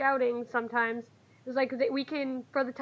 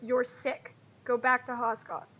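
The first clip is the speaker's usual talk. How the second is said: solemn, earnest, grave, dead-serious tone. Voicing a character who orders a sick companion home: very serious. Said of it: "he very seriously looks you in the eye and goes".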